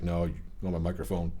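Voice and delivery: ordinary talk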